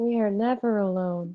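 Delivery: very eerie, loud, creepy echoing voice. Imagining a reply to family who say you can't go alone, put-on creepy echoey voice. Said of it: "In the creepiest, echoiest voice ever".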